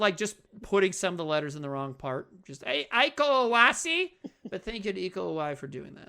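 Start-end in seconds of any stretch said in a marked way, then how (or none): 2.6-4.1 loud put-on Midwestern mom voice and accent. Saying a person's name with the letters wrong, in a midwestern mom voice. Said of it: "like a Midwestern mom".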